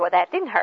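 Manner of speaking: sassy, defiant put-on child voice. Describing how a child might answer after a spanking, imitating a sassy child. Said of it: "they'll probably say it in a sassy way".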